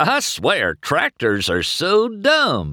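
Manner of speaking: delighted, gleeful cry, high and drawn out. Mater, watching a tractor tip over, cries out: gleeful cry. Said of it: "he cried gleefully".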